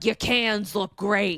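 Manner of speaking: put-on thick New York Queens accent. Retelling what a woman's husband said to her on their wedding day, thick Queens New York accent. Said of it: "he's like Queens, like New York thick accent".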